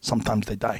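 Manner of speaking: put-on Korean accent. Quoting a man's reply to the speaker, in his thick korean accent. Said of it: "with his thick Korean accent".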